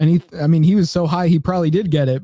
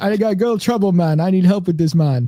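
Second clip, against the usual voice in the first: put-on Jamaican accent with broken English; 3 semitones higher than usual. Imitating a guy who speaks with a Jamaican accent. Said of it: "the Jamaican accent".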